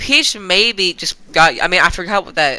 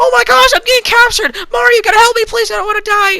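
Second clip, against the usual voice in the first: very high, loud, frantic, panicked squeal; 6 dB louder than usual. Retelling how Peach first reacted to getting captured: imitating Peach panicking at capture. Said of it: "Peach seems to get, like, more acquainted".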